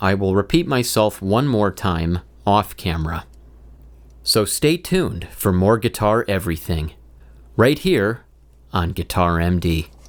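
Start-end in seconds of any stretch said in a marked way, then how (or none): 4.2-9.9 imitated, AI-like delivery. Repeating the video sign-off off camera, sounding like an ai. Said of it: "in the spirit of sounding like an A I".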